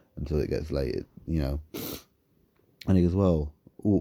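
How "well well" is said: usual speaking voice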